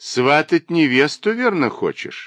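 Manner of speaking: sly teasing tone. Tidying the dressing table, a woman answers another's talk of a wedding with a mocking remark. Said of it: "насмешливо заметила".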